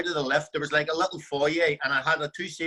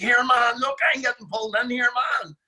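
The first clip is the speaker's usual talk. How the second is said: mock high-pitched shout, calling out loudly; 8 semitones higher, 4 dB louder than usual. Retelling someone being pulled into the drug-test room: imitating someone shouting. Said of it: "he starts shouting to me".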